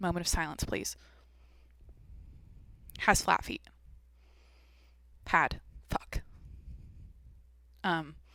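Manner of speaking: upset whisper broken by pauses, halting. Talking about Kobe Bryant, the speaker asks for a moment of silence, genuinely upset with halting pauses. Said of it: "that sounds fake how I'm like pausing like that. No, I'm genuinely like upset".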